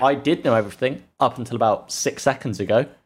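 ordinary talk, nothing marked

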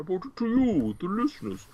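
high, swooping masked-villain voice with wide pitch swings. A podcast host presents a segment to the listeners, in a Bane impression. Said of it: "It's my Bane impression".

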